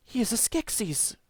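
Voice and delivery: hushed whisper pitched very high. Reading a gamebook aloud, Kira warns the Gelflings about the creature; whispering. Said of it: "whispers Kira".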